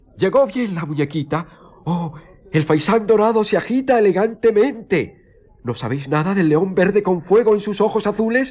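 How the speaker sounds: very high shriek through loud, cackling laughter. The count's daughter answers his story, shouting with loud laughter. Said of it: "profiriendo grandes carcajadas, gritó".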